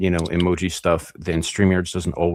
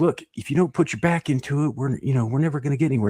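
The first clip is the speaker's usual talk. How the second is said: put-on bossy, nagging, pitched-up scolding yell; 7 semitones higher than usual. Describing a bit where an old man canoeing yells at his wife: retelling a man yelling. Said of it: "He's like yelling at his wife".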